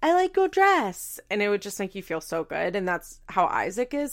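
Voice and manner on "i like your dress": put-on teeny tiny, squeaky, high, slow baby voice. Quoting the compliment she'd pay in her teeny tiny baby voice. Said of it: "she'd say in her little teeny tiny baby voice, like".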